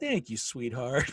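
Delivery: very condescending, patronizing, humouring put-on tone. Retelling what a little girl said after being complimented: imitating a condescending reply. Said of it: "very condescending".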